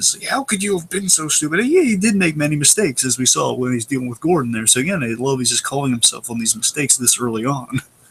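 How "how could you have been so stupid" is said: play-acted, furious, high-pitched angry scolding. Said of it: "His ego's just so angry with him".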